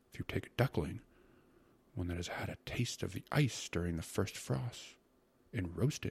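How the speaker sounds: ordinary delivery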